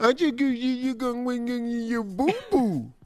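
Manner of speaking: put-on baby talk, as if speaking to a baby. Showing a line he says when people show him babies, in baby talk. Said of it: "Baby talk".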